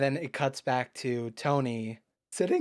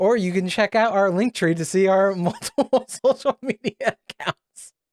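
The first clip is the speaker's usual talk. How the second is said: loud, pitched-up talking through laughter; 6 semitones higher, 9 dB louder than usual. Closing the video and pointing viewers to social links, laughing while talking. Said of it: "I don't know why I'm laughing".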